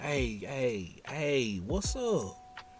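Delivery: heavy, very slow, drawn-out Southern drawl. Telling a story, the speaker quotes a friend calling out to a woman, Scoob's thick Southern accent. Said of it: "thick Southern accent".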